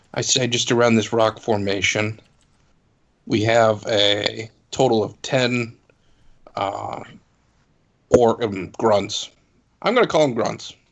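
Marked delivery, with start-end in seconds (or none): 0.5-9.4 discreet, wary, slow and careful delivery. Reporting enemy numbers to the group in character, speaking quietly. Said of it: "I quietly say".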